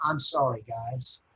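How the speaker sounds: soft whispered words. Retelling a tearful Sunday morning apology to the band: retelling a whispered apology. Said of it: "I actually whispered an apology".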